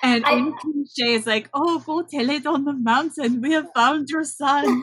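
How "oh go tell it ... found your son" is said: put-on heavy Dutch accent, pitched high. Describing a perky doctor character and quoting her, in Dr. Pinderschloss heavy Dutch accent. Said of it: "talks in a very heavy Dutch accent".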